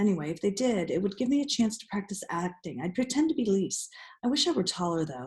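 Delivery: ordinary delivery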